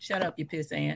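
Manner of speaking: terse, clipped delivery in a put-on voice. Voicing what Tywin really means by "Your Grace": imitating Tywin.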